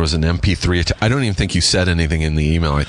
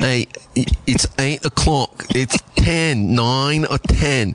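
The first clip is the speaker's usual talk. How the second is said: bad fake British accent, higher pitch; 8 semitones higher than usual. Admitting they can't do accents, showing how they'd just count, in a terrible British accent. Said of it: "This terrible, terrible, like, British accent".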